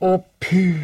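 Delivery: very high, loud calling out. Told his friend is not there, he calls out for him. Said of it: "ropade Kristoffer Robin".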